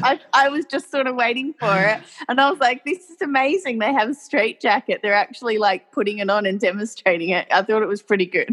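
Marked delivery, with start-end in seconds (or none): none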